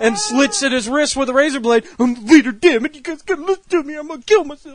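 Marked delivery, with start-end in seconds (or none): 2.0-4.8 whiny, high-pitched whining tone. Mocking the Red Ranger who bosses the others: whiny Red Ranger impression. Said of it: "While he bitches".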